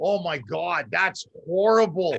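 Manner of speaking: slow, dry, sarcastic, fake sympathetic tone. Retelling a reply to a friend upset about a loaner car: retelling own sarcastic remark. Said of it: "I was being sarcastic".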